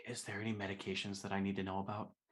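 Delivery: hushed, soft half-whisper. Answering a half-whispering character in a hug, in character: half-whispering. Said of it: "I'm just gonna whisper back".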